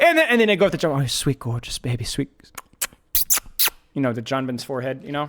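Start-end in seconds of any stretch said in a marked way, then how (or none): 1.0-2.3 put-on UK chef voice, lower and quieter. Imitating the UK chef Gordon Ramsay going up to John: Gordon Ramsay impression. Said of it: "Gordon Ramsay".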